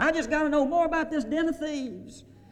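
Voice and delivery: excited shrieking scream, very high pitched. Retelling a friend running through the front door, acting out her scream. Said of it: "screaming at the top of her voice".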